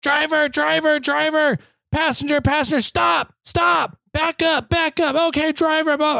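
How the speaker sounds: very high scream at the top of the lungs. Retelling a man spotting rigs through a trail section: imitating a man screaming. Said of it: "screaming at the top of his lungs".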